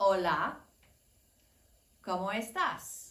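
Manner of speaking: very slow, word-by-word delivery. A speaker introduces Spanish phrases to listeners, said very slowly. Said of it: "I'm going to say it very slowly".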